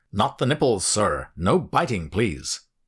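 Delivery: loud, peremptory, commanding barking voice. A clean-cut, polite American man objects, barked peremptorily. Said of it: "he barked peremptorily".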